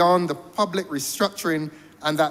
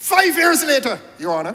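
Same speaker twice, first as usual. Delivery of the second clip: heated, insistent, pressing emphasis; 8 semitones higher, 4 dB louder than usual. Speaker addressing your honor, apologizing afterward for it; shouting. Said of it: "sorry for shouting".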